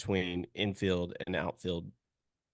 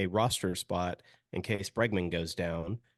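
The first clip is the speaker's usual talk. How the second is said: normal talking voice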